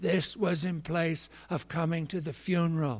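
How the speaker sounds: put-on high, raspy, trembling, quavering old man voice. Narrator voices a grandfather saying goodbye to his family: rasping, quavering voice. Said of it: "he rasped to them in a quavering voice".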